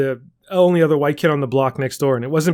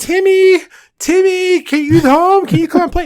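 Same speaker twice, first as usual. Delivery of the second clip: put-on very high, drawn-out, carrying yell; 6 dB louder than usual. Retelling climbing the fence to call a friend: imitating own childhood yell. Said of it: "just yell over the fence".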